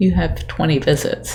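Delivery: plain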